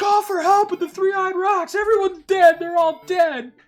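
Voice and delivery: shrill, high, panicked scream at top of lungs. Voicing a terrified game character calling for help: imitating panicked screaming. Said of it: "screaming that at the top of his lungs".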